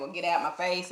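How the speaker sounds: normal talking voice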